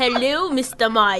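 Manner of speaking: English accent. Trying a requested greeting for the group: english accent. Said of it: "let's hear your English accent".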